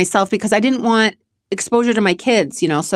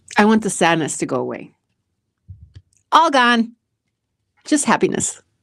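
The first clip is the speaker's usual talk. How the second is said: tearful speech while crying, slower. Answering a question while being told to stop crying, crying while talking. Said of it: "stop crying".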